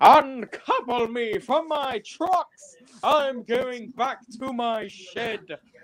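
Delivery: high, very slow, drawn-out storybook engine voice. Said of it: "that corner voice is literally just this".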